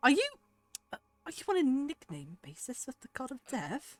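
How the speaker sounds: scornful, loud, swooping, scoffing tone. Voicing a character who scoffs at another character: scoffing. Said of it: "a scoffing sound".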